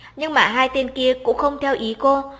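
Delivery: ordinary delivery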